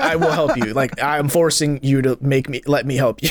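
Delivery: ordinary delivery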